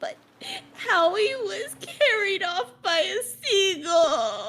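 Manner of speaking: very high, weepy, sobbing little crab voice. Voicing a little crab whose friend a seagull carried off: crab crying while speaking. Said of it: "saltwater tears begin to fall".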